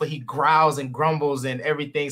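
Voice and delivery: ordinary talk, nothing marked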